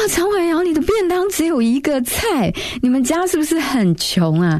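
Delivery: put-on shrill, very high, loud mocking laughing jeer. Recalling a boy beside her who mocked her lunchbox, imitating a loud mocking laugh. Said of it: "就会大笑说啊".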